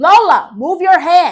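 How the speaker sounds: very loud, high ringside-style scream. Retelling yelling at a fighter during the fight: retelling own screaming. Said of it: "And I'm screaming".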